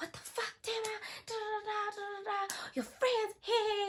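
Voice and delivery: very high, shrieking, high-pitched screaming outburst. Retelling how a woman came out of her room yelling, imitating someone screaming. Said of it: "she starts screaming at me".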